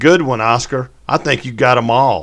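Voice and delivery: loud hollered shout. Reading a story aloud, a boy calls out into the night: shouting. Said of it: "before shouting in the direction of the shot".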